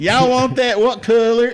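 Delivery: fake Southern drawl, pitched way up, loud. Joining the joke as a shop worker serving a customer, put-on Southern accent. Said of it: "You dip into the Southern accent".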